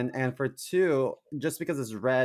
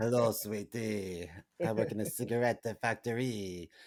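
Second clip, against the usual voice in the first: bad put-on vague European accent; 2 semitones lower, 7 dB quieter than usual. Repeating the line in a put-on accent: bad put-on accent. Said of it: "I don't know how to do accents".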